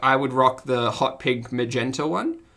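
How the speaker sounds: ordinary talk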